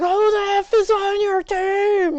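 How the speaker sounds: shrill screaming, "team" drawn out. Retelling a coach screaming at a player: imitating a coach screaming. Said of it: "he started screaming at him".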